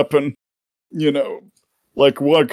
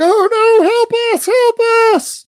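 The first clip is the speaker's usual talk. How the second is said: very high cries from a crowd; 4 dB louder than usual. Game master voices the ship's crew calling out; shouting for help. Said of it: "just starts shouting out for help".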